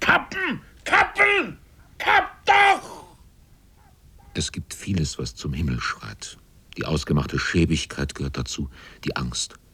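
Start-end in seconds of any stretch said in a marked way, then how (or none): 0.0-3.2 shrill, very high, very slow, drawn-out scream. Narrator reading Donkins's words after he overhears talk of cutting, screaming. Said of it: "schrie jetzt".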